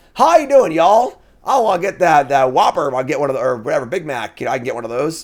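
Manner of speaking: loud, fake Texan accent, fully in character. Imitating a guy ordering food at a drive-through, in a fake Texas accent. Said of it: "ordered a meal with a Texas accent".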